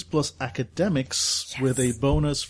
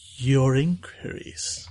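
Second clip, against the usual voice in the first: slow, drawn-out speech. Retelling a research visit, the speaker quotes the woman helping them: slow. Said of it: "She gets kind of slow".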